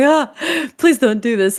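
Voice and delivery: high, frantic, rattled, panicked voice, acted out. Retelling panicking at a reckless man with a knife: retelling a panicked plea. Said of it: "I just panicked so hard".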